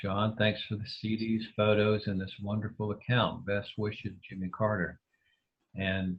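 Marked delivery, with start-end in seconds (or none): none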